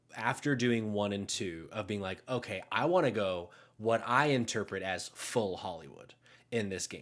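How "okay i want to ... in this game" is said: plain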